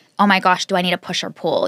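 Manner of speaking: ordinary talk, nothing marked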